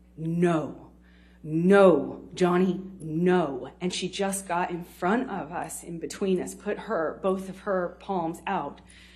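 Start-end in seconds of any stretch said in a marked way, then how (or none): 0.2-3.7 calm, concentrated, very slow, controlled, raised, vowels drawn out. Retelling how she stepped between them and told him no, slow and controlled. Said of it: "very slow but very concentrated, very controlled".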